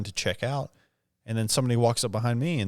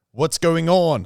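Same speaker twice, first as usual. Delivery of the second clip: clumsy put-on American accent, pitched up; 6 semitones higher, 8 dB louder than usual. Retelling how a man tried saying it back: imitating an attempted american accent. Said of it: "try to say that back to me in an American accent".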